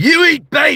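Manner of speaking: very high-pitched, loud yelled outburst. Showing the one line that sounds like John Marston: John Marston voice. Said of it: "the only time I can sound like him is if I do the".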